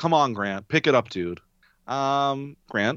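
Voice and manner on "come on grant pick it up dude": ordinary talk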